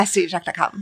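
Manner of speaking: said quickly, rapid delivery. Showing how she tends to say the web address, said quickly. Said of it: "I tend to say it quickly".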